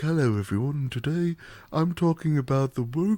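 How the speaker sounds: put-on light, understated, mild British accent. Imitating a lore video creator: soft, subtle british tones. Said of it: "very soft, like, subtle t-, British tones".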